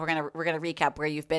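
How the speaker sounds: ordinary talk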